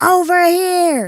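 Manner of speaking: loud shouting, yelling. Calling out in character to get a creature's attention: shouting. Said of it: "but I shout at that thing".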